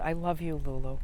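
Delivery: whispering. Speaker retells what she whispered in their ear during a long hug, whispering. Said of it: "she just whispers in my ear".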